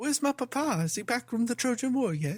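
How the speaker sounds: put-on young British boy voice. Mocking an actor's role in a Nolan film, doing a Tom Holland as young Ulysses voice. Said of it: "little young British Ulysses Junior".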